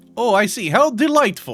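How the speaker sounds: put-on Russian-sounding accent. Voicing a newly met character, in a Russian-style accent. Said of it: "giving this dude like a Russian-style accent".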